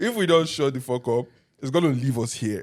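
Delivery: ordinary talk, nothing marked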